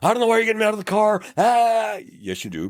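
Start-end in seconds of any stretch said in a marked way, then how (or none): 0.0-1.2 put-on very high, shrill scream. Retelling how drivers react when ordered out of the car: imitating a driver screaming. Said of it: "and then they're screaming".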